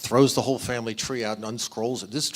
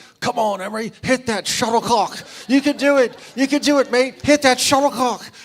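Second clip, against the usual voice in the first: put-on shrill, very loud, high-pitched English accent cheering; 13 semitones higher, 8 dB louder than usual. Retelling a man cheering at a badminton match, the speaker yells encouragement in an English accent. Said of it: "she just hears this English accent say".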